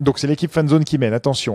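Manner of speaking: plain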